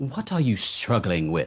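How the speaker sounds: put-on British accent, said harshly. Comparing how a question lands, the speaker imitates a British person: British accent. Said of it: "when you hear a British person say".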